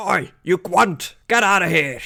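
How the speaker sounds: yelling dwarf character voice. Voicing a dwarf banging on the door: angry dwarf yelling profanities. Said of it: "yelling, like, all kind of, like, dwarven profanities".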